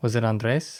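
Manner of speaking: Spanish pronunciation of name. Speaker guesses someone's name aloud, with spanish inflection on the name. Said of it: "now you're saying it with the Spanish inflection?".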